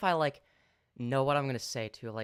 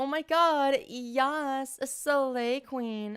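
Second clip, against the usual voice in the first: very high, slow feminine voice, "yes" stretched; 11 semitones higher than usual. Showing how a practice session starts: girl voice. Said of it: "something I know how to say in a girl voice".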